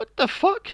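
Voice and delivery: disbelieving outburst, high and loud. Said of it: "I'm like".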